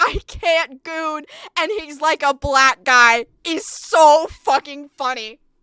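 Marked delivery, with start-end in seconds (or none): 0.0-1.2 put-on scream of a man, higher. Retelling what a man in a drive-thru keeps doing: imitating a man screaming. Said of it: "starts screaming".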